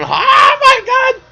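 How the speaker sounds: mock, very high, loud, shrieking scream. Act out your own reaction as you threw the purse out the window, retelling a scream. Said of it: "I'm screaming".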